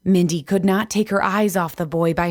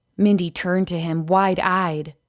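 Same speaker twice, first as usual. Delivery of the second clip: ordinary delivery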